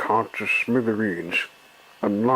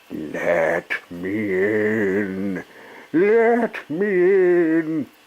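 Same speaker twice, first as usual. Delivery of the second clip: eerie, very slow, drawn-out ghostly spooky voice; 4 semitones higher than usual. Reading a story: shut outside the doors, Percy calls out in a spooky voice. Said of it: "said Percy in a spooky voice".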